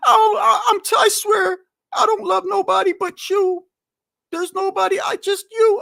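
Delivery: very high, tearful, crying voice. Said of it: "literally crying".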